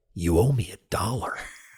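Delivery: hushed half-whisper, very close to the mic. Retelling how Bill Murray leaned over and spoke into an ear: imitating Bill Murray half-whispering. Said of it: "he whispers in my ear".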